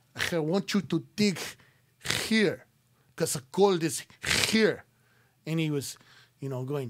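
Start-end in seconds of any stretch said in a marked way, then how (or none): 0.3-4.9 put-on Latin American Spanish accent.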